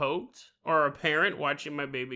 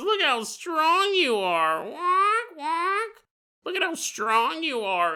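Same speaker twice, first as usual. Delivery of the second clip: bad, lousy, very high bird voice impression; 11 semitones higher than usual. Telling a story, voicing Big Bird praising someone's strength: worst Big Bird impression. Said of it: "This is the worst impression ever you've ever done".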